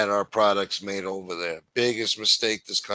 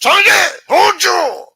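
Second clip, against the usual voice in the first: furious, very loud, very high scream; 12 dB louder than usual. Describing a soldier grabbing a woman by the hair, imitate the soldier screaming at her. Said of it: "screaming at her".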